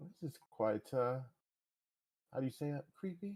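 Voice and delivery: soft, hushed, acted stage half-whisper. Voicing a character exploring a creepy place: half-whispering in character. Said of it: "he'll be whispering".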